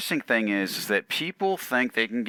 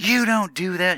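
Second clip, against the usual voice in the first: mock furious, livid yell, pitched up; 8 semitones higher, 4 dB louder than usual. Retelling how a livid lady confronted them at the courts, retelling her yelling. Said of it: "and just yelling and screaming".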